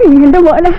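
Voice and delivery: slow, tearful, emotionally moved voice. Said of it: "കരയണോ? എന്തിനാ കരയണേ?".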